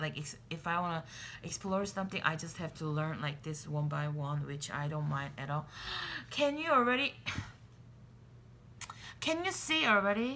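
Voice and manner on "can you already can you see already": high, excited, gasping voice. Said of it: "I'm too excited right now".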